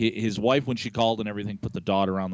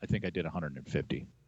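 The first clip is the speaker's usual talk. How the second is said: mock deadpan, quieter and slower; 4 semitones lower, 9 dB quieter than usual. Speaker recounts another man's answer in their conversation, retelling a deadpan reply. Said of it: "just deadpan".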